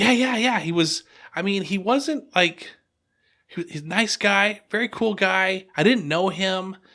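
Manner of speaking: excited, high-pitched, bright, rattled, drawn-out gushing.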